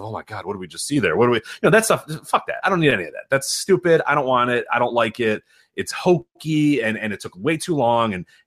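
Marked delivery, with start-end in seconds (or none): 0.0-1.4 grave, low, somber wrestling-commentator voice. Mocking wrestling backstage segments, the speaker mimics the announcers; imitating somber wrestling announcers. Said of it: "the somber voices of".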